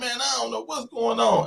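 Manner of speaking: whiny, high, creaky, rough-edged voice. Recalling an arrest, imitating a voice heard during fingerprinting, whiny voice. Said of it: "I ain't never heard it in that whiny tone".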